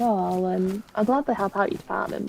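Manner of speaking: normal talking voice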